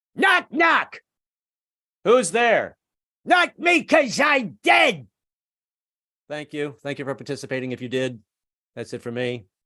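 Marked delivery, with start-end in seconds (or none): 0.2-5.1 very high, slow, shrill yell. Doing an impression of a comic telling a knock knock joke: Gilbert Gottfried voice. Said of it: "This is Gilbert telling a knock knock joke".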